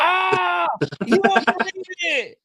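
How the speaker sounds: put-on screaming. Joking about texting a friend during the event: pretend screaming at the phone. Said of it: "I'm just gonna start screaming at the phone".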